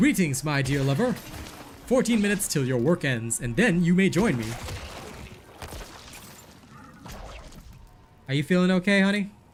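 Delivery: machine-like robot voice. Playing an NPC greeting a lover, in a robotic NPC voice. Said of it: "changed my N P C voice to be even more like a robot".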